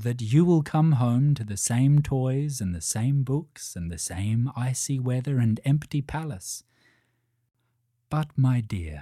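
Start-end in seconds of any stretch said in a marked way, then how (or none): none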